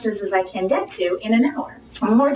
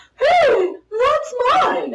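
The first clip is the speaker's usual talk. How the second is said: very high-pitched, squeaky little voice; 3 dB louder than usual. Showing a weird way to call out when someone swipes your purse, in a high voice. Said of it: "(in high voice)".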